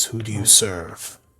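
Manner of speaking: echoing, echoey voice. Game master voices a figure questioning the player, in an echoing voice. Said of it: "his voice kind of echoes".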